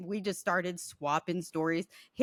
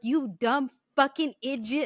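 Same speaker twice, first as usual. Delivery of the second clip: put-on angry cussing, higher; 6 semitones higher than usual. Retelling how a man reacted to a ghost copying his voice: imitating a man cussing out a ghost. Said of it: "He is cussing the ghost out".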